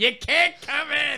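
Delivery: very high, shrill, shouted yell. Retelling a TV episode, shouting at kids: imitating Gilbert Gottfried shouting. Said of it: "Like, shouting at kids".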